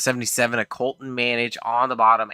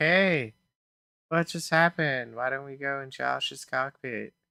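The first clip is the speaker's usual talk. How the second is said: teasing, mocking put-on commentator voice; 3 semitones higher, 6 dB quieter than usual. Teasing the co-commentator by imitating him: imitating co-commentator Chris. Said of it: "I don't sound like that".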